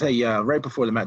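ordinary talk

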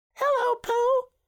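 very high, loud, excited little squeak. Narrator reading Roo greeting Pooh at his first party, squeaky Roo voice. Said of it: "he squeaked".

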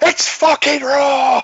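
shrill, very high, loud shout. Imagining a judge losing his temper over bread: imitating Paul Hollywood shouting. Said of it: "Paul Hollywood just go".

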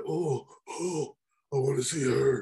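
put-on raspy voice. Describing the old days of wrestling, the speaker mimics Lord Nidus, raspy Lord Nidus impression. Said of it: "that hurt my throat".

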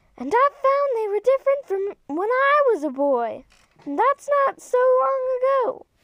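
very high, annoying, grating voice. Reading a story aloud, voicing Cousin Dinky answering Mrs. Little, high annoying voice. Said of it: "You've been all over the big valley and you know everyone. ... Wait, he got a real high, annoying voice".

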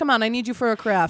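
put-on accent from Long Island, New York. Quoting the host who greets the speaker at the door, thick Long Island accent. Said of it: "who has this like thick Long Island accent".

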